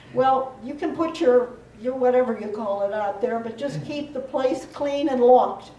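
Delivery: ordinary talk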